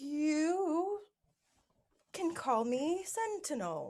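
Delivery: nervous. Answering aliens who have just asked who they are, nervous.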